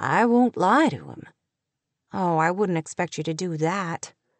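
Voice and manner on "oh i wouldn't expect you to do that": murmuring, lower pitch. Kate answers her father, murmuring. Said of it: "Kate murmured".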